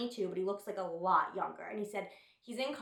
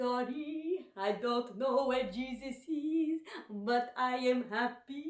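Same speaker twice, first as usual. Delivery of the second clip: put-on Haitian-accented speech; 4 semitones higher than usual. Quoting the speaker's Haitian nanny in the first joke written, in a Haitian accent. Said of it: "I'm going to do the accent here because I think I have a good Haitian accent".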